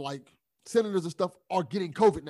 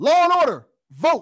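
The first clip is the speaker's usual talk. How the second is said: very loud, high, all-caps shouting; 8 semitones higher, 9 dB louder than usual. Reading out tweets written in all capitals: yelling the tweets. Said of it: "I'm yelling it because".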